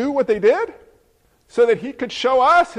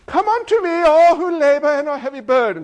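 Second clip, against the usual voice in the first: put-on British accent; 4 semitones higher than usual. Retelling a story in which Jesus calls out to people, Jesus with a British accent. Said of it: "he had a british accent".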